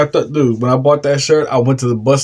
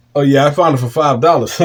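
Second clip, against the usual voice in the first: plain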